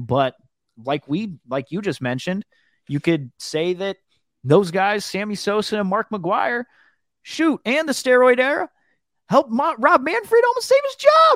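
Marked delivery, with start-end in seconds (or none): 4.4-11.4 frustrated rant, very high, swooping pitch. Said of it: "your voice went high there".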